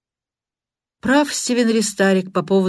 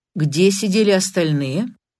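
ordinary delivery

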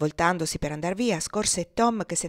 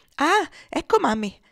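high, loud, joyful exclamation; 8 semitones higher, 5 dB louder than usual. Evangelina greets the woman stepping in at the door; crying out. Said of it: "gridò Evangelina".

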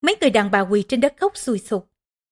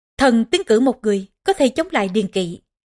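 ordinary delivery, nothing marked

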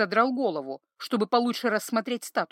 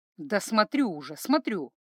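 ordinary delivery

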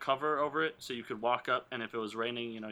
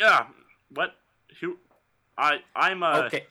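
mock-startled, just-woken sound, louder; 5 semitones higher, 12 dB louder than usual. Retelling a guard falling asleep mid-talk who wakes back up: acting out just waking up. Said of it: "And he wakes back up".

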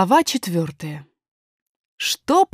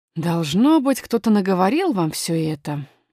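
usual speaking voice

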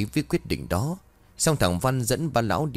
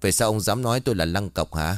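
plain

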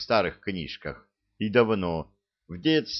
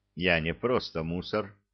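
ordinary delivery

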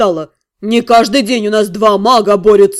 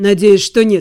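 muttered, mumbling. Daniel answers Rotan's question about the guardianship claim, muttered. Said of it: "пробормотал Дэниел".

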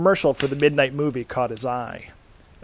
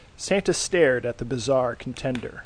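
ordinary delivery

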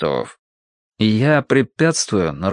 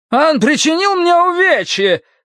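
thin, very high-pitched cry. Narrator reading a man in a robe crying out: thin high-voiced cry. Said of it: "неожиданно тонким голосом вскричал".

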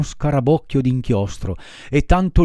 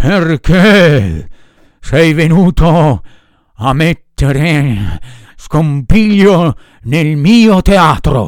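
put-on big, loud, congested, stuffed-up ogre voice; 7 dB louder than usual. Reading a puppet master confronting a puppet who disrupted his theater, big ogre voice with head cold. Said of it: "con un vocione d'orco, gravemente infreddato di testa".

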